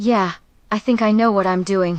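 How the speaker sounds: ordinary talk, nothing marked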